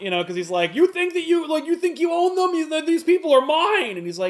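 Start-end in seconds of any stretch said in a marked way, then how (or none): 0.7-4.0 very high, shrill, loud, acted-out screaming outburst. Retelling a scene where Luthor screams at Superman: imitating Luthor screaming. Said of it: "so Luthor screams at Superman".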